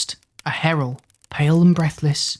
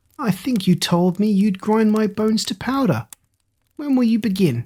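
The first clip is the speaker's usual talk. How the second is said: high, cheeky, confident, mocking jeer; 6 semitones higher than usual. Reading a story aloud, voicing a taunt at the giant stuck in the moat: jeering. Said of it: ""You must catch me first," / said [name]".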